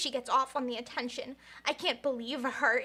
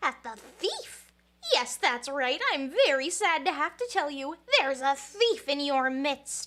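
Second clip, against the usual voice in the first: swooping sing-song character voice, pitch swinging all over; 4 dB louder than usual. Speaker voices a line from the game, Monokuma voice. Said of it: "to do a Monokuma voice".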